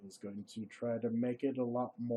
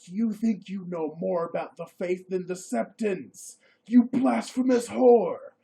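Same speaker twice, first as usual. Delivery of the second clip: full-volume, shrill, very loud scream; 8 semitones higher, 11 dB louder than usual. Narrating a game, voicing Stanipo as he turns and sees Fisher sleeping: Stanipo screaming. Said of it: "and he's like, / waiting to hand, waiting hand and foot on all of you blasphemous idiots. / are his his hand is shaking".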